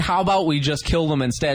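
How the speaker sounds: normal talking voice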